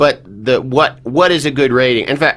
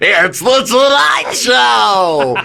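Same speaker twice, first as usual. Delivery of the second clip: put-on hyped, jazzed-up delivery, much higher; 11 semitones higher than usual. Recalling how he overdid it on the tonight show, the speaker is retelling a jazzed-up delivery. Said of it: "I really was like jazzing it up".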